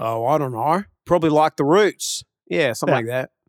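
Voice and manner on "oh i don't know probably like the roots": Australian accent, done on purpose. Trying out a practice sentence in an Australian accent. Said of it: "you could say it in an Australian accent".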